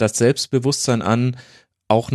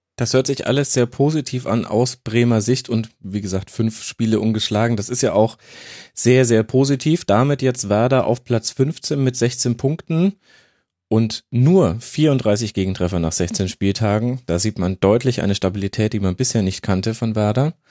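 normal talking voice

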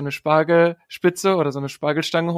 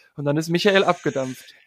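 ordinary delivery

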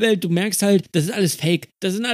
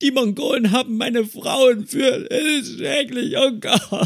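high, drawn-out, sobbing, crying wail; 5 semitones higher than usual. Describing a side-quest character who falls to his knees: imitating a wailing game character. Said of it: "fängt an zu heulen".

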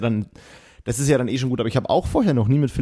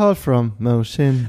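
bored, unmotivated robotic announcer voice, fading out. Chatting about automated voices, mimicking a call announcement: imitating unmotivated Siri. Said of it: "Bisschen unmotiviert manchmal ist".

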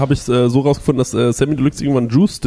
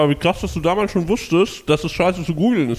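mouth full, chewing, slower speech; 4 semitones higher, 3 dB quieter than usual. Reacting to another speaker's story of how his name came about, talking with mouth full. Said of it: "Entschuldigung, dass ich jetzt Mund voll habe".

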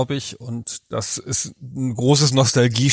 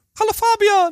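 very high, sweet, cute little voice; 3 dB louder than usual. Greeting the co-host at the start of the episode in a Kirby voice. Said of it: "ich wollte schon mal die Stimme von Kirby nachmachen".

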